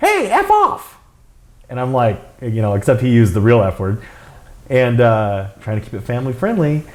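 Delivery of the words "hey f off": tiny, squeaky, very high little voice. Retelling what a voice behind him said while posing for photos, little voice. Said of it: "in this little voice".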